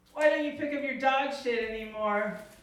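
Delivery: plain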